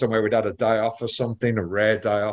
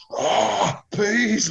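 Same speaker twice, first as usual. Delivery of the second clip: abrupt, very high freaking-out blurt; 11 semitones higher than usual. Retelling how a friend reacted to unwanted peas: imitating C J freaking out. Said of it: "like that".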